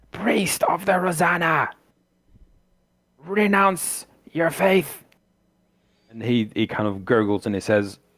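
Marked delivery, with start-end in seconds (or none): 0.2-5.0 very high, shrill screaming. Game master voices an old woman lashing a priest, screaming at him. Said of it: "you hear her screaming at him".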